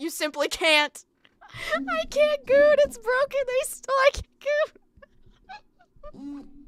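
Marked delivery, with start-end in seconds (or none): 1.7-6.4 screeching, very high-pitched screaming outburst. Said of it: "starts screaming".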